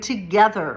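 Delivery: the word together stressed. Speaking about how empires fall, stressing the word together. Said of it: "emphasis on the word together".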